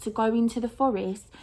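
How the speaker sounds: ordinary delivery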